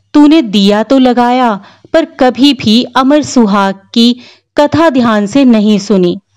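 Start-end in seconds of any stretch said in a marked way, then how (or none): none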